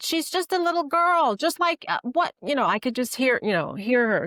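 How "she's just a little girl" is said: put-on Bronx accent, angry scolding, higher pitch. Imitating a mom going off on a kid: imitating mom's angry Bronx scolding. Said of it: "she'd be like".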